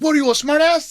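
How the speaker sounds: put-on thick French accent. Retelling the chef's retort to the speaker, in Philippe's thick French accent. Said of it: "Had a very thick French accent".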